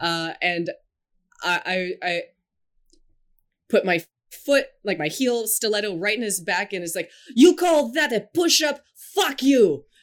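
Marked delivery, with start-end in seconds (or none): 7.3-9.8 acted-out yell, much higher and louder. Describing a dream workout scene, retelling a yell. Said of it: "yell at him in a Russian accent".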